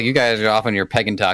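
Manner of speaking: ordinary talk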